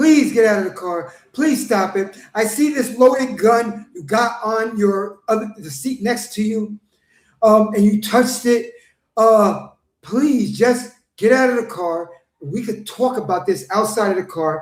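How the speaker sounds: courteous, respectful, gentlemanly pleading. Retelling how officers talked to a driver: imitating someone pleading politely. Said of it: "pleading with him, talking to him like a gentleman".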